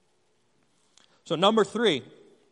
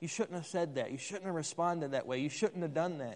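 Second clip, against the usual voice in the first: soft, hushed whispering voice. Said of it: "God whispers and says".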